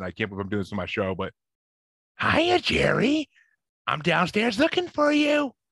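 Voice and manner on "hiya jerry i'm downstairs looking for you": creepy voice, very high and drawn out. A parent shows on his show the voice he used on his kids, Pennywise voice. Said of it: "that's my Pennywise voice".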